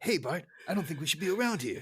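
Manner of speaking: meek, mild, timid voice. Retelling a scene where the gangster acts meek: imitating meek Fat Tony. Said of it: "he's kinda meek".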